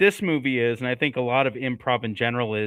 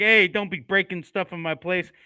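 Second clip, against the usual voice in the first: pitched-up mafioso tough-guy voice, laying down the law; 6 semitones higher than usual. Retelling what a movie character says to guests: imitating a mafioso-type guy. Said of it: "being this kinda mafioso kinda guy".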